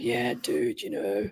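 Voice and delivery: husky, slow, breathy murmur. Describing a husky voice the speaker hears, imitating it as a husky Godfather voice. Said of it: "Godfather voice. He's like".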